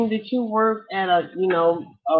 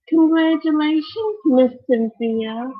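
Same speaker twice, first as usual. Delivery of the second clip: put-on precious, sweet, high little child voice; 7 semitones higher, 4 dB louder than usual. Retelling what a man's daughter said to cynthia, in her sweet, precious voice. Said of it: "with that sweet, precious voice".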